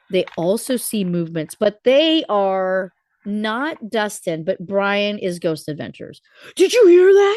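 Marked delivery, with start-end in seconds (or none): 6.5-7.4 very high, loud, hyped-up excited outburst. Retelling how Brian exclaims during a ghost hunt: imitating Brian getting louder. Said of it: "He just gets freaking louder".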